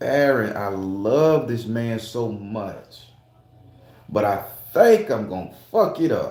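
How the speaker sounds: usual speaking voice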